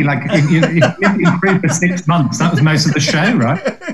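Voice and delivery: high, teasing voice, laughing while talking.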